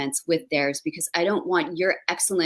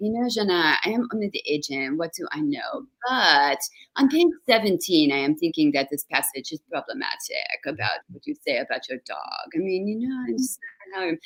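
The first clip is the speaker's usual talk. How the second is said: fake French-accented voice. Imitating her agent giving her notes as a writer, in a put-on French accent. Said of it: "she hates it when I do this accent".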